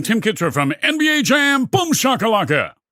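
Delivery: loud delivery. Asked by the interviewer to introduce himself, the guest answers very loud. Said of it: "That was very loud".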